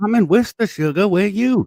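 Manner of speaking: fake southern woman voice, pitched very high. Retelling how the listener's little voice relaxed those guys, in a put-on southern woman voice. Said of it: "You're like".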